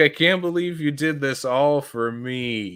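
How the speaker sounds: slow, tearful crying with drawn-out "me". Retelling a cartoon scene where SpongeBob starts crying: imitating SpongeBob crying. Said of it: "you hear SpongeBob, like, start crying".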